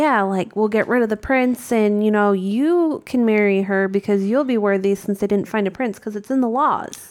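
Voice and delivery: ordinary delivery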